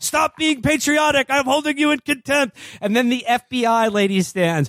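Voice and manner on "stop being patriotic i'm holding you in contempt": mock scolding yell, higher pitch. Retelling a film scene, imitating the judge calling for order. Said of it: "the judge, Frank Langella, is just like".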